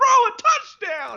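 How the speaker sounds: put-on, shrill, very high, loud screaming. Talking about watching a football game, yelling at the team: retelling own screaming. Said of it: "I'm just screaming".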